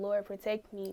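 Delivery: ordinary delivery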